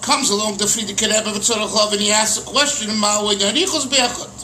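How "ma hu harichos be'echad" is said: ordinary delivery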